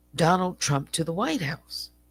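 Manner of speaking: ordinary talk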